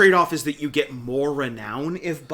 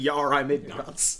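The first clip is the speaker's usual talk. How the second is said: ordinary delivery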